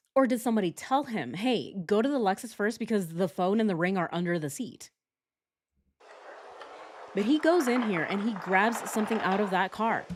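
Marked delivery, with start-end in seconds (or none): none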